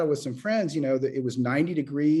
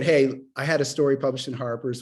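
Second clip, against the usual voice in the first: plain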